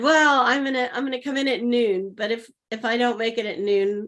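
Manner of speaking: normal talking voice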